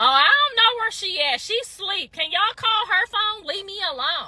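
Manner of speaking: petty, resentful, jealous, dismissive tone. Retelling how a jealous person would have answered: imitating a jealous person. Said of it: "Jealous would have been like".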